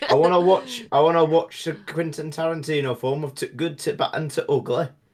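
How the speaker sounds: put-on loud, high northern English accent. Showing how people from the north of England drop words: northern English accent. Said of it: "the entire north of England".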